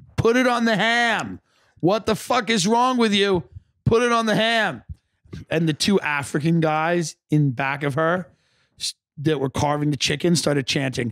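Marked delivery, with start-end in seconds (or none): 0.2-4.8 very high, shrill screaming on the edge of tears. After a grueling day falling at dance, speaker retells screaming: reenacting own screaming. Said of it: "I just started screaming".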